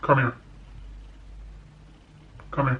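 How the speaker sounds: stern, low, firm voice.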